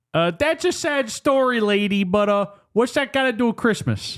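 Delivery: put-on very high-pitched, accidental Chicago accent. Retelling a New York day player's reply in a scene; accidental Chicago accent. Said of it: "That was more of a Chicago accent".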